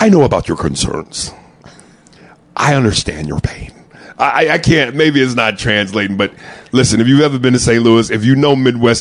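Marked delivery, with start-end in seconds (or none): 0.0-3.7 carefully enunciated, proper diction on each word. Imitating Cedric speaking in a commercial: imitating Cedric enunciating properly. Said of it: "enunciating all these words properly".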